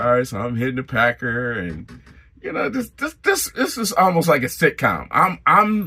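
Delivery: ordinary delivery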